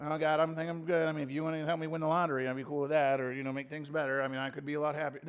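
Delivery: laid-back, casual, offhand tone. Acting out a prayer of someone not begging: imitating a casual prayer. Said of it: "let me say it another way".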